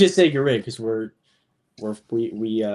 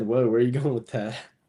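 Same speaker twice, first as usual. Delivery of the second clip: ordinary talk, nothing marked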